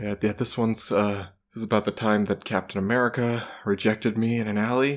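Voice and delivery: put-on mumbled delivery. Imitating a pretentious performer shuffling up to speak, imitating mumbling. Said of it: "shuffling up and mumbling".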